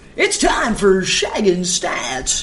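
slow, drawn-out sports-show announcer voice. After someone calls for it, the speaker switches into an announcer voice. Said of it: "Announcer voice".

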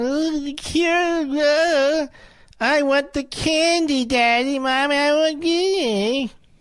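put-on whiny four-year-old voice, very high and slow. Mocking a played clip's speaker: mocking four-year-old voice. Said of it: "Always sounds like a four-year-old".

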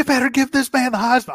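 mock rant delivered high pitched and loud. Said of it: "I love that quote".

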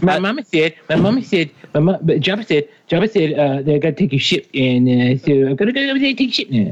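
halting, repeating, rambling comic voice, tripping over words. Acting out Adam Sandler playing Greedo: Adam Sandler voice. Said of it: "Adam Sandler is Greedo".

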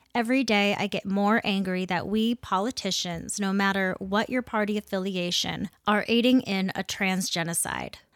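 normal talking voice

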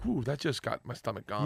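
ordinary talk, nothing marked

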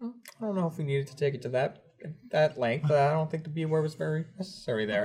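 soft, very calm, unbothered, even-keeled voice. Retelling what Michael says when a coworker swears: imitating Michael's calm voice. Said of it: "in his very, like, calm voice".

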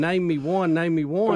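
ordinary delivery

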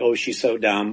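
ordinary delivery

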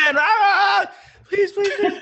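very high, pleading, drawn-out scream with stretched ah. Speaker voicing one inner voice battling another, screaming. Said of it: "this is screaming".

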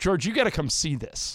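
normal talking voice

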